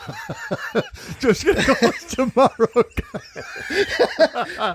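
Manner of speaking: high, wheezing, words squeezed out through crying laughter.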